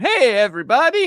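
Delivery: very high, loud, belted cartoon voice. Repeating a greeting as in the show, Doctor Nick voice. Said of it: "That's Doctor Nick from The Simpsons".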